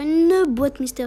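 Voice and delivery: slow, stretched-out loud shout.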